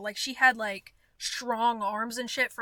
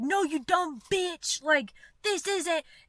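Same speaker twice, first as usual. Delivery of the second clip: mock furious drunken yelling, high and angry; 6 semitones higher than usual. Retelling how an angry customer yelled at her: imitating someone screaming. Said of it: "He started screaming at me".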